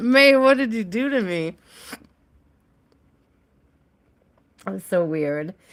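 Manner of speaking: hiccuping while speaking. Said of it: "I got the worst hiccups now".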